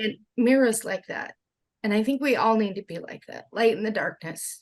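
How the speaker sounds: heartfelt, moved, voice welling up. Speaking about kindness as a default, getting emotional. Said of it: "Sorry, get emotional".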